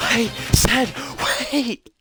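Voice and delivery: put-on screaming gang leader voice. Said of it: "I can't do his voice and scream".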